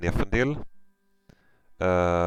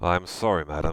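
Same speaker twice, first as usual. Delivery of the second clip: ordinary delivery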